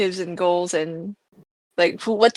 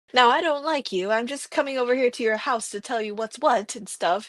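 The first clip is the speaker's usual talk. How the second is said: put-on high, prim and proper old-timey film girl voice; 5 semitones higher, 4 dB quieter than usual. Describing a character as the type of girl from old-timey films, old-timey film girl voice. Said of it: "type of a girl from old timey films".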